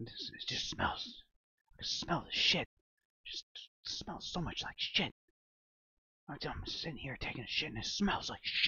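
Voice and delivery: loud, rambling, carrying whisper. Retelling a stranger rambling in the next bathroom stall: imitating a loud whisper. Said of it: "a loud whisper".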